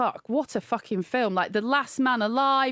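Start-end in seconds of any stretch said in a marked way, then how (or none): none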